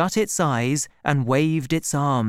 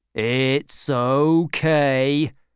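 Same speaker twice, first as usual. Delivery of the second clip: deep, low, slow, unhurried, reassuring tone. Narrator reading a character speaking to a troll, low, slow voice. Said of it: "Butler spoke to the troll in a low, slow voice".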